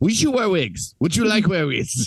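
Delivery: put-on Dutch accent. Retelling an interviewer's question about wigs: imitating Dominic Moynihan's Dutch accent. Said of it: "He's doing the whole thing with the Dutch accent".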